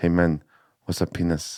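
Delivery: real quiet, hushed, confiding voice. Telling a story, the speaker quotes a mate's question, said really quietly. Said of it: "like real quietly".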